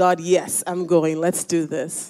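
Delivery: plain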